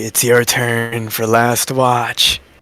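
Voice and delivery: very slow, hushed, drawn-out half-whisper. Voicing a character waking the next person for watch: half-whispering. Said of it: "whispering in the back all the way".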